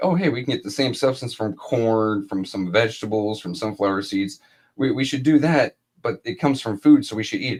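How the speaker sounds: normal talking voice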